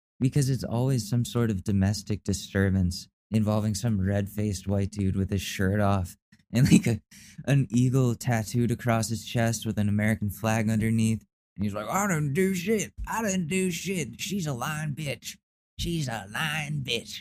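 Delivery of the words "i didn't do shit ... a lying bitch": put-on drawling voice, higher pitch. Imitating an angry shirtless man arrested on Cops: Joe Exotic voice. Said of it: "Now I sound like Joe Exotic".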